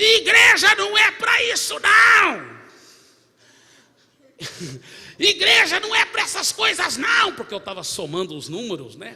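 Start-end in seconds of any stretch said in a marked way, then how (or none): 0.0-7.3 wild yell, very loud, high and swooping. Retelling a man who came down the church aisle shouting, imitating a man shouting. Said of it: "gritando assim".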